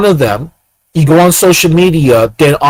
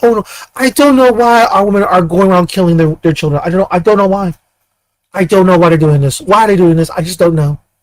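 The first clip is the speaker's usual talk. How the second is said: fake-innocent, feigned clueless, playing-dumb tone; 3 semitones higher than usual. Mocking a group by acting out their claimed confusion: mock clueless innocence. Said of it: "They act like a bunch of virgins".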